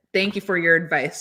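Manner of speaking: ordinary talk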